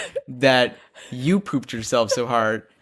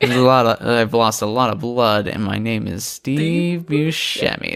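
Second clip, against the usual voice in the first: put-on woozy, slurred, drunk-sounding drawl. Joking about a bloody Halloween resident, doing a Steve Buscemi impression. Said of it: "This is my Steve Buscemi impression".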